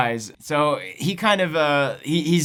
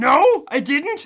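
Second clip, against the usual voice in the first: very high, stunned, shocked tone; 10 semitones higher, 4 dB louder than usual. Recapping a scene where a character learns his dad is dead, imitating shock. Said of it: "Dennis is very shocked".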